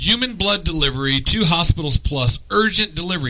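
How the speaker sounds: ordinary talk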